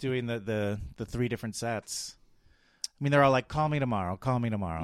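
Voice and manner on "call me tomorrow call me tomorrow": ordinary talk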